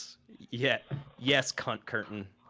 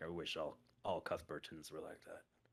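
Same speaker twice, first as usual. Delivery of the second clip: very soft, low mutter under the breath; 5 semitones lower, 14 dB quieter than usual. As the player walks away, the character mutters; muttering under his breath. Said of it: "hear him muttering under the breath".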